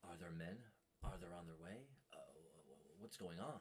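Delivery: hushed, soft voice under the breath. Narrator voices the player's character in a dark room where others sleep, hushed tone. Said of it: "in a hushed tone".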